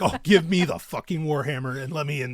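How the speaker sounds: put-on eager, excited voice. Retelling going into the quarry pit with a sledge: retelling own past excitement. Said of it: "I'm happy as shit. I'm like".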